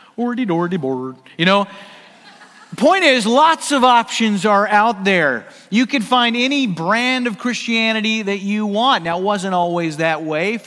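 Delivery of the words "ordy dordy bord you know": slight put-on Swedish gibberish accent. Joking about how to pronounce a word, sounding a bit like the Swedish Chef. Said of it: "You got to sound like the Swedish chef a little bit".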